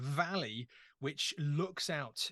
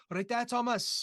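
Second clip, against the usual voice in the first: put-on Welsh accent, high and raised; 8 semitones higher, 5 dB louder than usual. Act out your mum greeting you at home, imitating mum's Welsh accent. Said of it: "Half of them speak Welsh".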